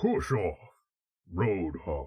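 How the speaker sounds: dull thuggish voice. Trying out Overwatch voices, the speaker attempts Roadhog: Roadhog impression. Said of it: "sounds like a unintelligent ruffian".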